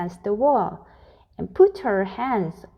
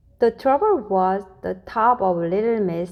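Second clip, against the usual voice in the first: plain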